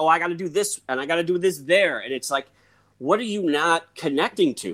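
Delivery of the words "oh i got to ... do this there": ordinary delivery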